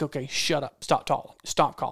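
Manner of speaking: ordinary delivery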